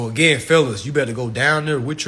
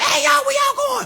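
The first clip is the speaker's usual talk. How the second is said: mock brash, loud, high-pitched holler. Imitating the loud one in a group of women calling out: imitating a loud woman calling out. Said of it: "she loud as hell".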